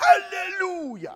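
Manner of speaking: raspy, drawn-out high shout. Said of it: "He says all the time".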